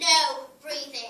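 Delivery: loud, slow, stern, strict teacher voice.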